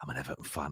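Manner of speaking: quiet whisper. Retelling a reply to a woman at a train buffet counter: imitating own past whisper. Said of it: "I started whispering as well".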